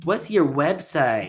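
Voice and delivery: irritating, annoying home-seller voice. Imitating homeowners who stall on a contract: annoying seller voice. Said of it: "I have to do my annoying seller voice".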